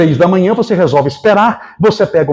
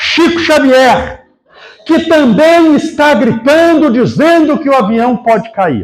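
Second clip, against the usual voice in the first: put-on shouting voice, higher; 8 semitones higher than usual. Retelling how a priest on a crowded plane called out: imitating a priest shouting. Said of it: "no último banco ele gritou".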